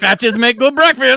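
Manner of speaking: put-on Kazakh accent. Saying a line that another speaker says sounds like Borat: Borat voice. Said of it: "Why did you sound like Borat?".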